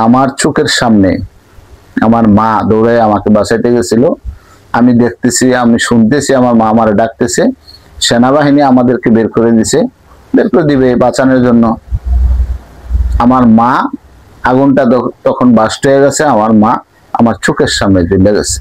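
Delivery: normal talking voice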